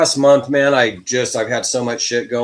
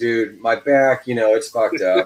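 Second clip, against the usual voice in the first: ordinary delivery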